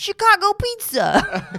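New York accent, very high, loud and swooping. Revealing their replacement for a bing sound to co-hosts, in a New York accent. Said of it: "It was in a New York accent".

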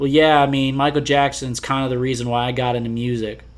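play-acted deadpan, flat monotone delivery. Retelling how a guy answered without missing a beat, in mock deadpan monotone. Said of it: "in the most, like, deadbeat monotone delivery".

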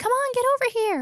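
very high, loud, shouted yell. Calling the group over during a game, yelling. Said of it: "I'm just yelling".

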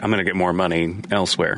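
ordinary talk

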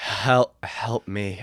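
hushed whispering. In a comedy bit, a contestant redoes his last words, whispering. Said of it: "I'm trying to whisper".

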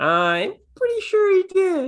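taunting singsong.

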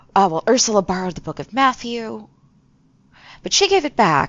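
muttering under the breath. Game master voices a character pretending to think, mumbling under her breath. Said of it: "mumble under her breath a little bit".

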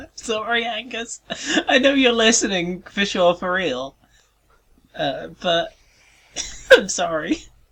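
talking through giggles. Apologizing to a named listener after a joke, giggling while talking. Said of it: "are you giggling at the name Angus Dick?".

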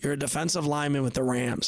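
plain

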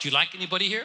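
teasing, ribbing tone. Chatting with an unmarried woman he has just met, teasing her. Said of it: "I'm just teasing you".

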